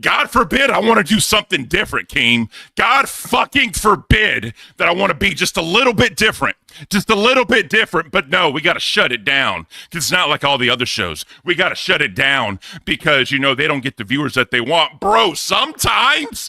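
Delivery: furious, angry ranting outburst. Ranting at King: angry rant. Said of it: "He's being angry".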